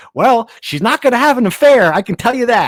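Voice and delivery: put-on loud, high, belted out in a Southern accent. Reporter retelling a memorable interview quote, Debbie Yow Southern accent impression. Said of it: "in her Southern accent".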